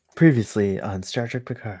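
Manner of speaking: breathy voice. Right after a countdown, starting the recap intro; breathy. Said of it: "That's a that's a nice breathy".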